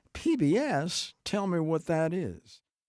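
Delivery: high-pitched, slow southern drawl. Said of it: "in her southern drawl".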